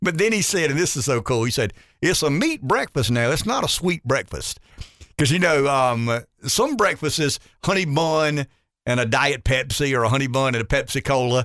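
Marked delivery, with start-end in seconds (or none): 2.0-4.6 folksy rural country dialect. Retelling what a farm owner told an interviewer: imitating Junior's country dialect. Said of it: "Junior's got this real country dialect".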